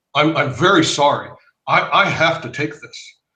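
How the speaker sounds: solemn, earnest, very serious and grave tone. Recalling excusing himself to the doctor or office manager, imitating a very serious tone. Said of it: "in very serious tone".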